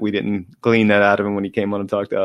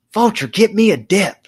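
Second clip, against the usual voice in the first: acted-out, very high, drawn-out, fired-up yelling; 12 semitones higher, 5 dB louder than usual. Retelling a story of a fired-up coach demanding something: imitating a coach yelling. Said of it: "he just starts yelling".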